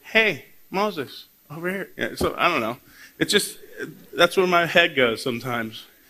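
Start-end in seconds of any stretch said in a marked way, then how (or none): 0.1-1.9 odd, tiny, squeaky, weird calling voice. Retelling the burning bush, God calls out to Moses: squeaky, weird God voice. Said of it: "what if it was a little squeaky and weird".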